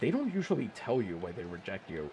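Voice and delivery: very condescending, talking-down voice, low and soft. Speaker retelling a man's reply about a life insurance rejection, imitating most condescending voice. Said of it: "he just goes in the most condescending voice".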